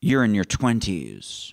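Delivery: voice dropped very low, very deep. Recalling what a man told them one evening, the speaker imitates his very deep voice. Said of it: "he had a very deep voice. I'll try".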